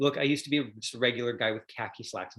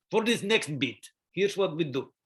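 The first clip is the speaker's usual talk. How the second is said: put-on thick, heavy Russian accent with raised pitch; 6 semitones higher, 4 dB louder than usual. Retelling a theater director's workshop advice, imitating Stanislavski's thick Russian accent. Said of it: "said with a very thick Russian accent".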